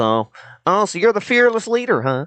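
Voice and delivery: high, whimsical voice with playful swooping pitch. Showing how a cartoon turtle sounds in the show: whimsical Raphael voice. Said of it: "it's like this".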